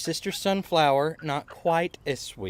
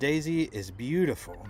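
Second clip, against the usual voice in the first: ordinary talk, nothing marked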